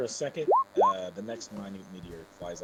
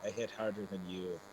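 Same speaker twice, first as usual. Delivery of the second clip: plain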